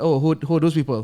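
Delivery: ordinary delivery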